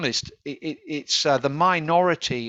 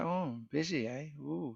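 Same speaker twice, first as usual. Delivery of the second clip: mock soft, hushed, slow, drawn-out sarcasm; 14 dB quieter than usual. Retelling a reply to a student who said she was busy: imitating own sarcastic remark. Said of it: "I was being sarcastic".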